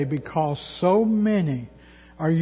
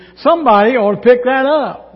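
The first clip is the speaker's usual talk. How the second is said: very loud, high, carrying voice; 6 semitones higher, 9 dB louder than usual. Retelling a lady in church speaking as she passed the pew, rather out loud. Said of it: "rather out loud".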